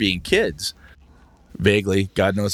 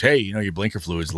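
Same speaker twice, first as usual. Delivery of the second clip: usual speaking voice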